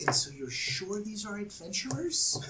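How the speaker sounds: quiet, discreet, hushed aside. The narrator voices one character asking another as the party leaves, speaking quietly. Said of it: "you hear Balin say quietly to Vala".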